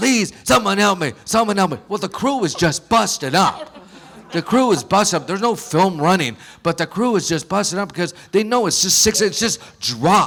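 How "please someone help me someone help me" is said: desperate, life-or-death hollering. Retelling how someone hung from a pony's neck: imitating someone hollering for help. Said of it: "he's hollering like he's for his life".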